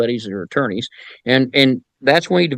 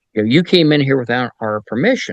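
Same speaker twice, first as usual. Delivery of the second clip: ordinary talk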